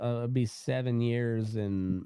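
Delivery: ordinary delivery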